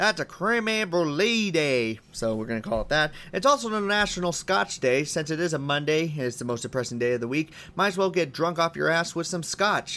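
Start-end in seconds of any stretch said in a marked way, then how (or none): 0.0-2.0 slow Southern US drawl on the words. Announcing the day's holiday from a list, in a southern american accent. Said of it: "I'm going to say it like a Southern American and say".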